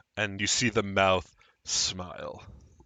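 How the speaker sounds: ordinary delivery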